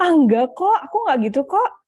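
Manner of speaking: dismissive tone. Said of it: "denial gitu ya istilahnya".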